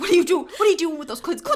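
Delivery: put-on coach voice, yelling. Retelling how Coach Bolton yelled at the boys: imitating Coach Bolton yelling. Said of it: "yelled at them".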